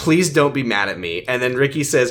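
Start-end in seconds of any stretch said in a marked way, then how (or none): none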